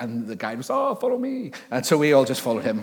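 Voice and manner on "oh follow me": put-on mixed French and German accent. Retelling what the guide said when asked if the climb was safe: put-on French-German guide accent. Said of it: "my own interpretation of what he sounded like".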